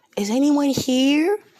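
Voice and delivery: very high, loud, piercing scream. Retelling a scene, acting out four-year-old Luffy screaming in Luffy's voice. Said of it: "and he screams".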